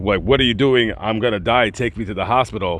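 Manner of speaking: ordinary delivery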